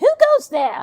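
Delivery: very high, very loud, shrill, squeaky fishwife voice. Voicing Ida in a cutscene, trying for a higher range: high-pitched Ida voice. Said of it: "It's higher than what I could do".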